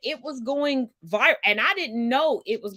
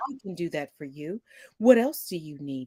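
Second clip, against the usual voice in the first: very low, artificial, AI-like phone voice; 8 semitones lower, 3 dB quieter than usual. Demonstrating the voice the speaker now uses on phone calls: AI-like phone voice. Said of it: "I've perfected A I".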